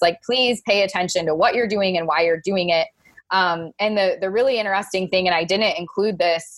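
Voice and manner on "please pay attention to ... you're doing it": usual speaking voice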